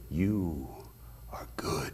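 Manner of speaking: very soft, close, hushed whisper. Telling how a man grabbed their hand and pulled them in: retelling a whisper in the ear. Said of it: "he whispers in my ear".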